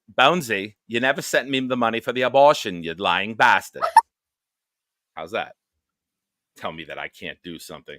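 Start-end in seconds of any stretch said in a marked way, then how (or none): 0.2-3.9 put-on Australian accent, higher and louder. Challenged to say it in aussie, the speaker tries the accent; australian accent. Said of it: "You got to say it in Aussie".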